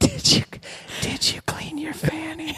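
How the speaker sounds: put-on whisper. Retelling what she asked in bed: imitating someone whispering.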